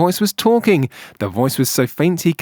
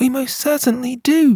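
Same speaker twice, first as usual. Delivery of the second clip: piping voice, much higher; 9 semitones higher than usual. Reading a story aloud, the tiny unseen voice answers a question: piping voice. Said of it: "piped the voice".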